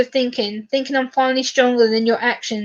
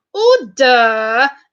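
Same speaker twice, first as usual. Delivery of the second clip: swooping, drawn-out, stretched words with swinging pitch; 4 dB louder than usual. Copying how Mister Speak called out in power, in a Mr Speaker impression. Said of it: "I have to do the voice when Mister Speak used to be in power".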